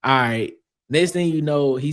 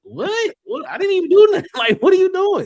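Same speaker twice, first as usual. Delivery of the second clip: mock stunned, shocked, very high-pitched outburst of disbelief; 5 dB louder than usual. Retelling a man's reply after being yelled at: imitating someone shocked. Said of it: "he was just shocked".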